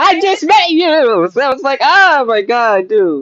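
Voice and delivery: high-pitched, impassioned yelling. Telling how you reacted to a stranger you had just met, yelling. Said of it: "I'm sorry to yell".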